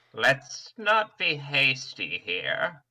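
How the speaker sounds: ancient dragon voice with swooping pitch. As a dragon answering a plea for mercy, speak in an old dragon voice. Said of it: "what's that fucking voice? / That's the dragon voice / who's this old man?".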